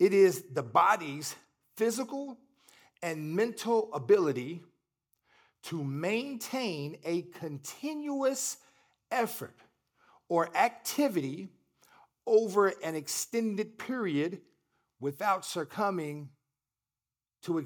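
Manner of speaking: slow, deliberate, halting, broken-up delivery. Speaker reading a definition aloud to listeners, said slowly. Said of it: "I'm going to say it slow".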